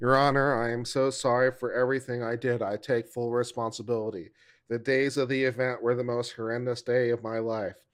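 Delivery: flat, emotionless, deadpan monotone. Mocking how an apology to the court was read: flat, no emotion. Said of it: "why are you reading your own statement flat?".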